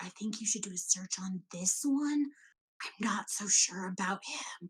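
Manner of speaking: quiet, hushed whispered aside. Player's character urging that a man be searched: whispering. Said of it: "and I'm whispering it".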